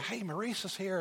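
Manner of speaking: acted-out whisper. Retelling what he said at church to the person beside him, whispering. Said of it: "I'm like whispering to Danita".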